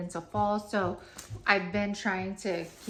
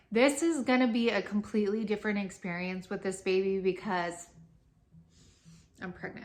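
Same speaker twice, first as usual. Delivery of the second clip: fast, words tumbling, fighting back tears. Speaker talking to viewers who had asked for a link, holding back tears. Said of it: "I'm trying not to cry".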